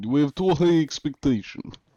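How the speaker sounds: put-on Russian accent. Answering a chat request to speak in a put-on Russian accent. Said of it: "Let's get Russian voice".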